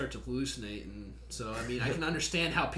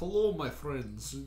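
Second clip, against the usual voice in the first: clumsy, bad put-on Russian accent. Recalling faking Russian without knowing any: bad fake Russian accent. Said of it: "I'm like doing this shitty Russian".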